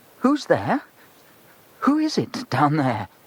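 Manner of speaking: shaky, trembling voice. A boy shines his torch down dark stone steps and calls out, shaky voice. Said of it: "He called in a rather shaky voice".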